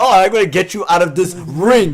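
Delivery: plain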